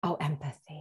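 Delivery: gentle, unassuming, soft and mild delivery. Showing the usual way of saying empathy, in a mild, soft voice. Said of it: "with this mild voice".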